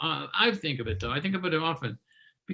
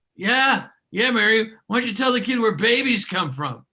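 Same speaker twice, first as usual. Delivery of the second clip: put-on loud, pitched-up, boozy drunken voice; 5 semitones higher, 5 dB louder than usual. After a kid asks Mom where babies come from, imitating a drunk voice. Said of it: "you hear this drunk voice from the workshop".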